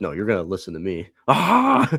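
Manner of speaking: loud, put-on screaming. Speaker acting out how one man screamed at another, retelling a scream in someone's face. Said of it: "He's just screaming right in his face".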